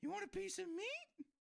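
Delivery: very high, creaky, creepy mascot voice. Joking about giant store mascots offering food: creepy mascot voice. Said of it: "Now everything's really creepy".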